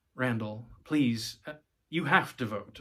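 plain reading voice

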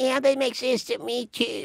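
mocking male voice imitation. Echoing another speaker's reply back at him, mocking imitation of his voice. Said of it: "Are you mocking my voice?".

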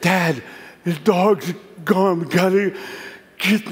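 winded, gasping, panting, out of breath. Retelling running back home to his father after losing the dog: acting out panting. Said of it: "I'm like panting".

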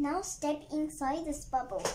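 ordinary delivery

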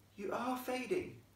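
gentle, hushed, soft, very high murmur. Stella speaks to the fading ghost, softly. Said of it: "she said softly".

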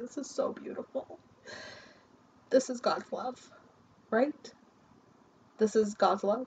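weeping, tearful voice while speaking. Speaking to viewers about the Ace of Cups, crying. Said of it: "I'm crying".

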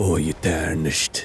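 put-on weary voice. Doing an impression after saying he sounds tired: Sean Bean impression. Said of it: "I can't do an impression".

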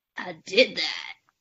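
put-on smug bro voice. Asked to redo the bit, saying it in a douchebag guy voice. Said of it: "Could you do that in your douchebag guy voice again?".

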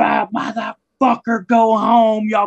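mock, shrill, very high screaming. Retelling a wrestler's rant from up in a cage: imitating someone screaming. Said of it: "he's up there screaming".

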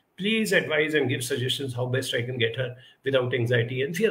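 plain

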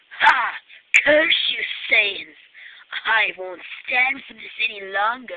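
deep, low, loud, hard-projected anime voice. Speaker announces his awesome new Vegeta voice, then tries it out. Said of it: "my awesome new Vegeta voice".

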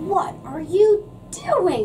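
full-throated, high, swooping bellow. Reading a story aloud, as Grandpa confronts Benny: bellowing. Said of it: "Grandpa bellowed".

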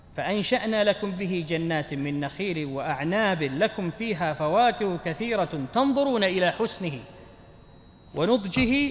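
ordinary delivery

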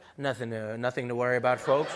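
low-pitched airline pilot announcer voice. Mimicking a pilot reassuring passengers during turbulence: imitating an airline pilot. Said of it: "the pilot comes and is like".

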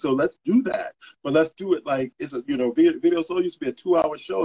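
plain

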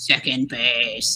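sinister, creepy, very deep, low voice. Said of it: "said in a really creepy voice".

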